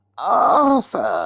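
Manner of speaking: acted gruff London gangster voice. Doing a Tom Hardy impression of Alfie Solomons greeting Arthur. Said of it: "This is Tom Hardy".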